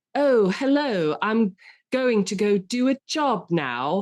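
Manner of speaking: put-on slow, overdone, try-hard British accent. Mocking an actor's try-hard British accent in a film role: imitating Keanu Reeves's overdone British accent. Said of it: "like they're doing a high school production".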